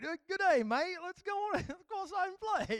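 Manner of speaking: high-pitched Australian accent. Retelling the reply to their kid saying daddy, in a put-on Australian accent. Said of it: "am I in Australia?".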